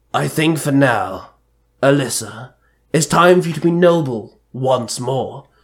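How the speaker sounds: usual speaking voice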